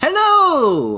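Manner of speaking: very high, very loud sudden blurt, stretched long. Playing a character who sees barrels being loaded, blurting out very loudly. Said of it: "is just blurts out very loudly".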